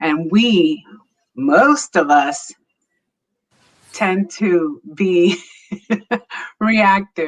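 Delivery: slow talk with laughter running through the words. Explaining a point while laughing at a son's remark: laughing while talking. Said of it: "I'm sorry, I'm laughing".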